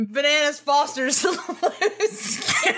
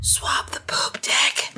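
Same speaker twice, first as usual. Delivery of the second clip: very slow, drawn-out, close whisper; 6 semitones lower than usual. Voicing a character who grabs him by the scruff: whispering in his ear. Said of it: "whispers in his ear".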